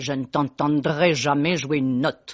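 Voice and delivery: put-on French spoken with Russian accent, elderly woman's voice. Speaker quotes her grandmother, who adored her, in a Russian accent. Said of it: "avec son accent russe".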